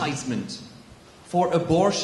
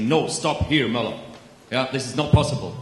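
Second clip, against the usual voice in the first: very deep, commanding, authoritative bass voice; 6 semitones lower than usual. Retelling the bishop's gestures in the talk show: imitating the bishop's very deep voice. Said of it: "There's a very deep voice".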